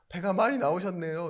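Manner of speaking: laughing in a big, loud, high-pitched voice. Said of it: "막 웃으면서 큰 목소리로".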